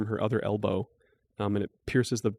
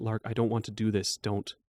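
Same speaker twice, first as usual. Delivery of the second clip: fearful, cowering voice; 3 dB quieter than usual. Voicing a character who cowers before a player's attack: cowering. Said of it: "he's kind of cowering a little".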